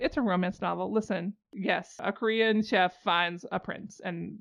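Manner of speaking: ordinary talk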